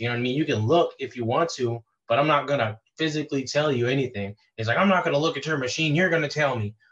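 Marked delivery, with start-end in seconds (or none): 4.8-6.7 acted heated, insistent, mild yell. Retelling a contractor demanding the utility depth: imitating someone screaming. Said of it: "screaming in my face".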